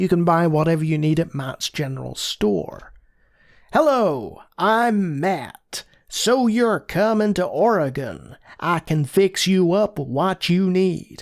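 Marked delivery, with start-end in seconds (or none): 3.7-11.2 slow, put-on American accent, laid on. Reading a game aloud, voicing the store owner Matt: Matt's put-on American accent. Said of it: "I do apologize for that accent".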